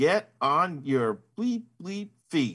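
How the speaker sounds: toned-down fiery yell, mild, half voiced. Retelling how a player on the ice screamed at an opponent: imitating a player screaming. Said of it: "one of the U S A women's players just screams".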